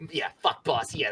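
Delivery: sneaky, scheming put-on rat lackey voice. Voicing a rat overheard through a grate, in a rat voice. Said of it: "That was a fantastic rat voice".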